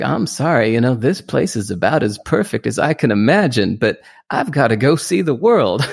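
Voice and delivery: put-on Mississippi accent. Retelling a story, the speaker quotes a man turning down an invitation to stay, in a Mississippi accent. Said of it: "like a Mississippi accent".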